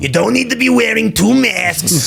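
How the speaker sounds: gruff, very high, rough, exaggerated cartoon voice. Explaining your cartoon versions of people, demonstrate your gruff, over-the-top Fauci voice. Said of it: "it's gruffer".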